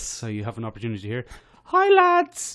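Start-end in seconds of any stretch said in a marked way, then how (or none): 1.6-2.5 very high, very loud put-on lady voice. Reading out the words of an email in a put-on lady voice. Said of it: "I'll do it in my famous lady voice. ... That's my famous lady voice".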